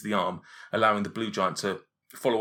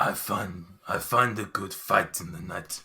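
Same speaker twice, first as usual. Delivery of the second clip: put-on Gallic accent. Asked in character whether they slept well, answering as Hushnag with a Gallic accent. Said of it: "I don't know where this accent come from".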